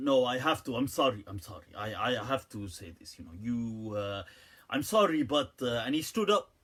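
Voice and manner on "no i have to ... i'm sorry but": put-on Arabic accent in English.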